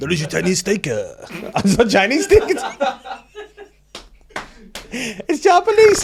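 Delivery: very high-pitched, loud, made-up Dubai accent. Playing someone in Dubai without knowing the accent, speak in a made-up Dubai accent. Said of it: "What's a Dubai accent? I'll, I'll make it up".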